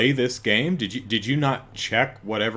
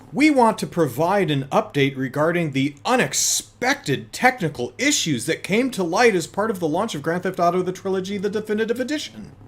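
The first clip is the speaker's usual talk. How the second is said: higher-register reading voice, distinct from own; 8 semitones higher than usual. Reading out Rockstar's statement, using a higher register voice to set it apart. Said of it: "I'm going to use that higher register voice".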